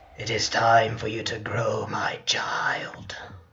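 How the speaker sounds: silly put-on voice, deep and slow. Voicing a game character's line during a playthrough, in a funny voice. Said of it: "that's one of the many voices you can expect".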